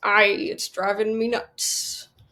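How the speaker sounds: put-on pirate voice. Telling a joke, delivering the pirate's punchline, pirate voice. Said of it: "Should probably work on my pirate impression".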